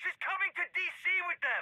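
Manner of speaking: shrill, furious, very high angry screaming. In a heated argument, told to stop yelling: screaming in anger. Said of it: "if you keep screaming like that?".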